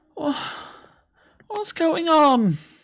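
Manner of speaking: put-on very high elderly woman's voice. Voicing a woman calling down from a top balcony: old woman voice. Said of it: "relatively old, like, woman dressed in sort of a nightgown".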